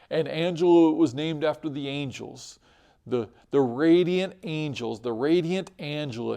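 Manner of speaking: normal talking voice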